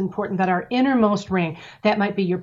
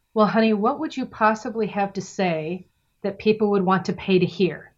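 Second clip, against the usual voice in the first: tender, gentle, caring motherly voice. Telling their parents about going full time as a speaker, mom answers: imitating mom's caring voice. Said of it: "my mom said in the most caring voice possible".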